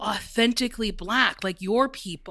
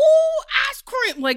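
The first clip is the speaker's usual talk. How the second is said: put-on wild, exaggerated caricature voice, much higher; 7 dB louder than usual. Speaker retells reading the lines for a role they booked, in a put-on wild voice. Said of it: "put on a very like mm-hmm. wild voice".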